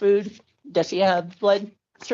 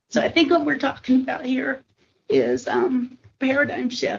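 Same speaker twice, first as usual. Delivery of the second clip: tearful, choked-up voice, speaking through tears; 3 semitones higher than usual. Invited to say something to the group, speaking about this man: tearful. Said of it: "the reason I'm in tears".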